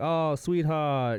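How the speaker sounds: put-on Southern grandma voice. Describing a character who reminds them of a Southern grandma: imitating a Southern grandma. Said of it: "it reminds me of a Southern grandma".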